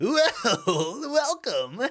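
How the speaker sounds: shrill, high, loud cartoon villain voice. Imitating how the actor voices a cartoon villain: Mark Hamill as the Joker. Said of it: "but he talks like this".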